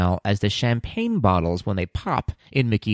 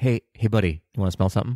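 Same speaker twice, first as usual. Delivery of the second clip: pretend creepy manner. Acting out a pickup line about smelling like a ride: mock creepy tone. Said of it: "That's not creepy at all".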